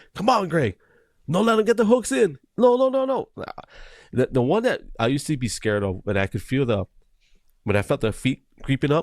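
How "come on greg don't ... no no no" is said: acted, very high, escalating shouted yells. Recalling voices heard during competitions: imitating people yelling. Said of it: "I still hear those voices sometimes".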